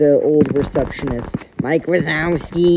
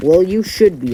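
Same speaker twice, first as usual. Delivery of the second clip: rude, impolite tone; 4 semitones higher, 3 dB louder than usual. Retelling a teacher's reply about a grade: imitating a rude tone. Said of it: "a rude tone".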